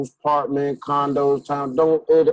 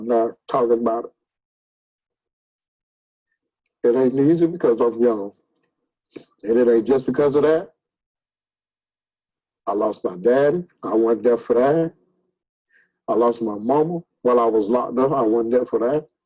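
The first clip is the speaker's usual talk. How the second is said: holding back tears, lower; 3 semitones lower than usual. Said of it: "I'm trying not to cry in front of y'all".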